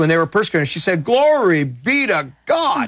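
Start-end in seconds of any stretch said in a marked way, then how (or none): 1.0-2.9 high, very slow, drawn-out southern drawl. Retelling what Gloria Copeland said when persecuted: Gloria Copeland southern drawl. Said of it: "in her southern drawl".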